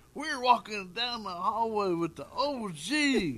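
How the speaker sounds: very loud, very high, drawn-out crowd screaming. Retelling people at a convention hallway: imitating people screaming. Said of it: "they're screaming".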